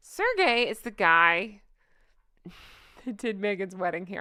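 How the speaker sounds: words spoken through leaking laughter. Naming who did the wedding hair: laughing while talking. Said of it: "I can't say that without laughing".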